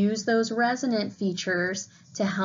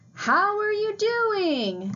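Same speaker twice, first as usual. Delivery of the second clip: very high, very slow, loud, swooping, drawn-out shout; 12 semitones higher than usual. Demonstrating the very high end of modal register, loud high-pitched voice. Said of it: "shout functional phrases using a loud, high-pitched voice".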